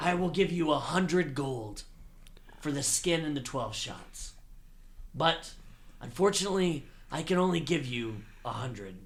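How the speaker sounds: loud orc monster stage whisper. Voicing an orc character who walks over to bargain with another character: loud orc whisper. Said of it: "they whisper kind of loudly in their orc tones".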